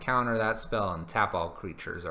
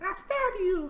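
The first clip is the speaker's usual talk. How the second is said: really tiny, very high squeaky voice. Describing a little flower that waves at you, then stabs you: really tiny voice. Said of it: "in like this really, really tiny, tiny, tiny like voice".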